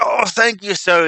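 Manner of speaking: put-on old beggar voice, high, slow and drawn out. Voicing the beggar thanking a player for a coin: old beggar voice. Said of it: "He takes it and he kinda".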